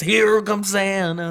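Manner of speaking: high cartoon voice sounding like a lifelong chain smoker. Describing a Disney scene where Goofy speaks: Goofy voice like a chain smoker. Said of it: "my Goofy's like a chain smoker".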